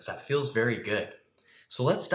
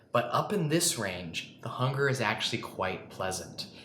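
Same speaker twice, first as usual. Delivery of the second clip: ordinary talk, nothing marked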